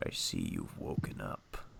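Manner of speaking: very deep, muffled, very low and very soft. Playing an unseen voice speaking to someone tied up: very deep muffled voice. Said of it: "It's a very deep voice".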